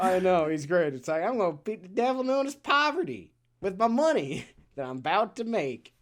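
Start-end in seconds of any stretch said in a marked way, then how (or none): 1.2-5.8 put-on strong Western cowboy accent, laid on, pitched up. Quoting a game character, making fun of Portuccio's very cowboy accent. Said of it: "making fun of Portuccio and his very cowboy accent".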